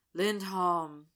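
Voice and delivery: said with a sigh. A man at a bar with friends lists players, with a sigh. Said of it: "Zack says with a sigh".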